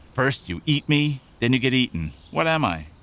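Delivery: ordinary delivery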